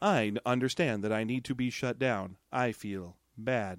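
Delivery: low, flat robot monotone, level, without inflection. Retelling what a robot character says, in [name]'s inflectionless robot voice. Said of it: "this is an inflectionless robot".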